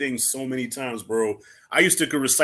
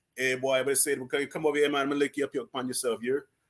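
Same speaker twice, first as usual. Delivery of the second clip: put-on Jamaican accent, quieter; 4 dB quieter than usual. Speaker explaining how Jamaicans talk, imitating a Jamaican accent. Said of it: "a Jamaican will come out and be like".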